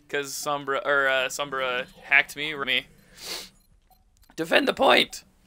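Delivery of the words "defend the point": yelling, much higher. In the middle of an online match, calling out to the team: yelling. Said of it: "I'm not yelling at you. I'm yelling in general".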